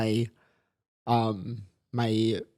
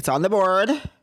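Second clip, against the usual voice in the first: high, loud, sharp, curt, dismissive tone.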